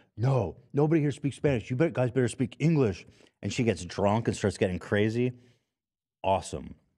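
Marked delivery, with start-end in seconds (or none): 0.2-3.1 frantic, panicky, high-pitched freaking-out rant. Retelling a woman's outburst when her date speaks Spanish: imitating someone freaking out. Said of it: "she starts freaking out like".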